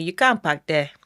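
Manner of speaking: imitated Nigerian accent. Quoting a parking attendant, in a nigerian accent. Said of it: "when I want to get into my Nigerian".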